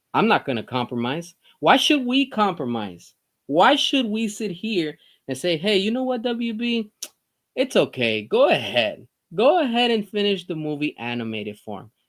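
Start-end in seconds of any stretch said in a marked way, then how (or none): 5.5-11.8 play-acted tone dripping with sarcasm. Mock-saying what others would tell WB to do: put-on sarcastic tone. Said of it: "I'm being sarcastic".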